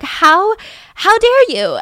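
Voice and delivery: put-on high, loud, indignant, outraged toddler voice.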